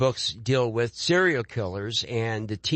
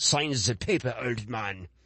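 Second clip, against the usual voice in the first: put-on German-like accent; 4 dB quieter than usual. Showing how dialogue written in an accent is read: German-like accent. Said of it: "supposed to be some kind of, uh, German or something".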